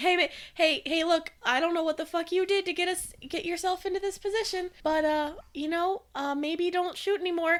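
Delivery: frightened, pleading tone. Grabbing a companion in character, begging him not to shoot: terrified pleading. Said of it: "and I'm terrified".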